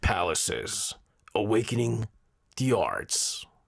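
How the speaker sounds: deep, dramatic, very slow movie-trailer announcer voice. Announcing this year's theme title in movie-trailer announcer voice. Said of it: "let me do that in my voice. ... It's like a movie movie trailer".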